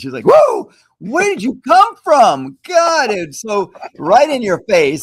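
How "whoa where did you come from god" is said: put-on high, jolted, shrill, swooping startled cry. Retelling how a spouse reacted when a child startled her: imitating a startled scream. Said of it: "scared the heck out of my wife".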